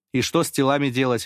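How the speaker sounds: ordinary delivery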